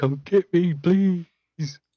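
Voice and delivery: shrill, high, very loud, unhinged yelling. Describing a guy heard outside the window, imitating a guy shouting. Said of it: "shouting about like".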